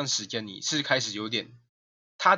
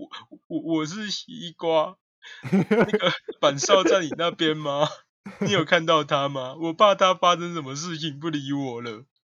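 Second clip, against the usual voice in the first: mock slow, tearful, sobbing crying voice, pitched up; 5 semitones higher, 5 dB louder than usual. Retelling a phone call from a crying girl, imitating someone crying. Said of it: "听到有个人在哭".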